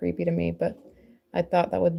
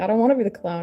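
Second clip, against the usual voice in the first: put-on little kid blubbering and sobbing through tears; 3 semitones higher, 4 dB louder than usual. Retelling how her son, crying, refused to be the clown: imitating a crying child. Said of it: "And he started crying".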